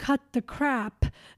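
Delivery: plain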